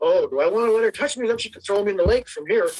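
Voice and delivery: ordinary talk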